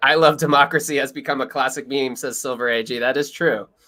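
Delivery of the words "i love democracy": normal talking voice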